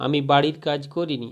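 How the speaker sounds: normal talking voice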